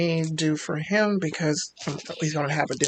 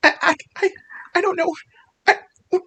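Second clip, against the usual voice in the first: frightened screaming, higher and louder; 8 dB louder than usual. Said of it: "she's screaming at the top of her lungs".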